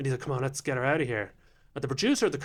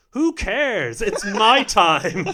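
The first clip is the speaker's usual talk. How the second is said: very loud, high, flustered, put-on panicked blurt; 7 semitones higher, 10 dB louder than usual. Retelling answering an audience member during a comedy set, retelling a panicked reply. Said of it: "And I panicked again".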